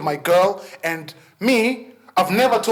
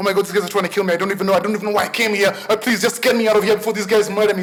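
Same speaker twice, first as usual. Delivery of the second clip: frantic, very fast, rattled-off panicked babble. Retelling a frightening moment with some men, re-enacting very fast speech. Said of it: "I started speaking very, very fast".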